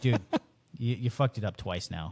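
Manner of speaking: stern, reproachful voice. Retelling how the manager kicked them out of the booth: imitating a stern manager. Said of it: "he was very stern about it".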